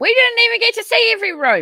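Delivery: very high, loud, exasperated yelling. Speaker criticizes a paranormal investigation, yelling. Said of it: "Sorry, me yelling".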